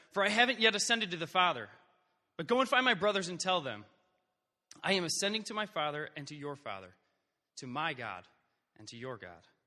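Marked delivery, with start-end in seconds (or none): none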